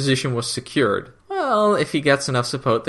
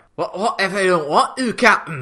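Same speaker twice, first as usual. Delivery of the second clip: high, bad, put-on Scottish accent; 6 semitones higher than usual. Retelling Jon's reply over the comms, in Jon's bad Scottish accent. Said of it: "exactly the right kind of terrible Scottish accent".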